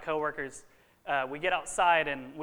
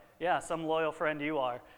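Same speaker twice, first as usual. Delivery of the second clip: mock joking, teasing tone. Retelling what a friend jokingly said as the speaker was leaving, imitating a friend's joking jab. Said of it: "she just jokingly said".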